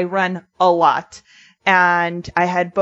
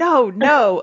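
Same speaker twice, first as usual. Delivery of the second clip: mock, reenacted screaming yell; 4 semitones higher than usual. Speaker retells a dog chasing them, retelling screaming no at dog. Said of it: "Like I was like screaming like no at the dog".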